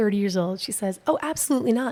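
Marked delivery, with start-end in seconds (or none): 1.1-1.9 mock light yell, pitched high, mild. Retelling what a woman said to a neighbor: imitating someone yelling. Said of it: "and yells it at him".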